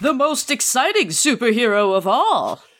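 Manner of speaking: dramatic, over-the-top comic-cover announcer voice. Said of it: "you gotta say it like".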